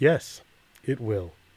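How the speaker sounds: acted dry, neutral, deadpan delivery, giving nothing away. Retelling a neutral observer confirming a card ruling: imitating Phil's deadpan poker face. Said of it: "with his best poker face he's got".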